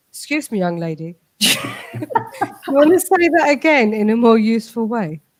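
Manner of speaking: serenely composed, very calm, unruffled voice. Retelling how the husband corrects a remark: imitating someone speaking very calmly. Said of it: "He very calmly".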